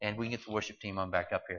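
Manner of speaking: fast, rushed, hurried delivery.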